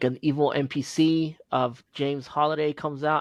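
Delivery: normal talking voice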